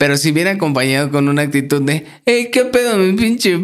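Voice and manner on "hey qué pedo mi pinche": very high, shrill, snide and sneering mocking tone. Explaining when a nickname sounds rude, speaker acts out a put-on mocking tone. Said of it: "Con ese tonito".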